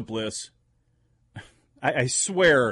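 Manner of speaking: ordinary delivery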